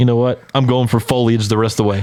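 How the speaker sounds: usual speaking voice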